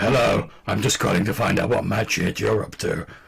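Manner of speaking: gravelly, dead flat, deadpan voice. Imitating the deadpan NPC Tombstone calling on the phone: gravelly deadpan Tombstone voice. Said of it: "a gravelly voice".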